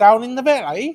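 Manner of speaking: fake Welsh-Geordie accent. Joking with a co-host that a listener can hear them in Wales, bad attempt at Welsh accent. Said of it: "That wasn't Welsh".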